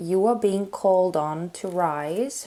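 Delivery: normal talking voice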